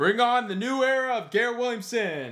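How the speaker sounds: weird, odd holler, very high-pitched. Closing a video announcement to viewers, the speaker yells in a weird way. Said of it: "I yelled that in a weird way".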